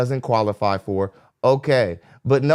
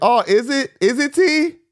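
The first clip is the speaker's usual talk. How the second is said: very slow, high, drawn-out, skeptical; 13 semitones higher than usual. Retelling how Kendra questioned a claim: imitating Kendra's doubtful question. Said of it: "Kendra was like".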